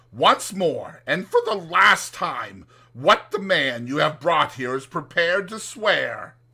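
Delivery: severe, harsh, loud. Narrator reading the guardian demanding an answer for the last time, very stern. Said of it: "said my guardian very sternly".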